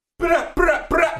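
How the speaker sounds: put-on Jamaican accent. Closing the first podcast episode with a joke: put-on Jamaican accent. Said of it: "I throw the Jamaican thing in there".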